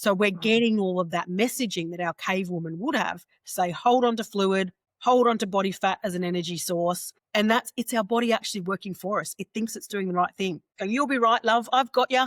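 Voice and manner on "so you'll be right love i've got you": put-on Cockney accent, pitched up. Speaking as one's own body to its owner, in Cockney accent. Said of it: "all of a sudden our body has a Cockney accent".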